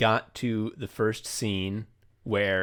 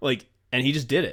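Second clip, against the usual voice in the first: ordinary delivery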